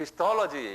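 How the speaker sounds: 톨 syllable of 크리스톨로지 stressed. Teaching how to pronounce 크리스톨로지, stress on 톨 syllable. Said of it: "이 액센트가 토에 있어요".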